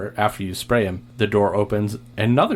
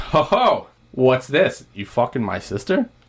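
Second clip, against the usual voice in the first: aggressive bro voice with swooping pitch; 4 semitones higher than usual. Voicing a brother who catches a player with his sister: aggressive bro voice. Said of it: "And he goes".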